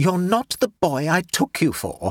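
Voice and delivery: said with a snort. A narrator reads a woman's remark to the narrator after leaning back, snorted. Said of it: "she leaned back and snorted".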